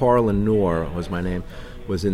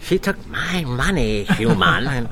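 high, slurred, very slow drawn-out voice; 5 semitones higher than usual. Recalling another actor reading his lines, the speaker mimics that slurred Ferengi voice. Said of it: "he started to talk with a slurred, slurred speech".

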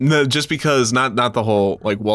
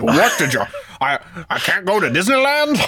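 bad, heavy put-on Russian accent, pitched up; 7 semitones higher than usual. Mocking the other speaker's impression of the public speech: mock Russian accent as Khrushchev. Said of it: "your Russian just sounds like a fat oil bill".

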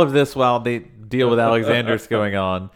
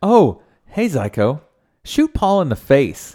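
casual, offhand, no-fuss, matter-of-fact tone; 4 semitones higher than usual. Repeating exactly how Tim said it to Zyko, a matter-of-fact imitation of Tim. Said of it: "Matter of fact".

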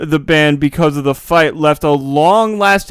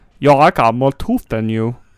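low, put-on English accent; 4 semitones lower than usual. Redoing a quoted line from a Brit Awards clip, speaker uses a put-on English accent. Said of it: "That was my English accent".

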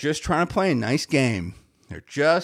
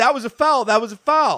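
put-on children's yelling, higher pitch; 5 semitones higher than usual. Retelling kids at the game joining in: imitating kids yelling. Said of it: "all the kids around me start yelling".

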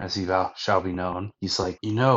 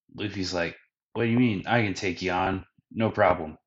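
ordinary delivery

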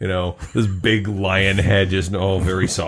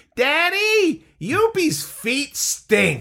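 put-on very high, swooping small kid's shriek. Retelling a child's shout cutting through a quiet game, imitating a small child screaming. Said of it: "this small child's voice that screams".

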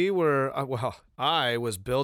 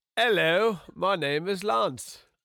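fake British accent, very slow, high pitch; 7 semitones higher than usual. Introducing himself on the podcast to listeners: put-on British accent. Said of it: "I don't know why you went British".

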